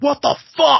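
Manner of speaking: high-pitched, loud yelling outburst. After possibly saying Hoboken wrong, the speaker imagines a viewer: imitating a New Jersey viewer yelling. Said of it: "yelling at their streaming device right now".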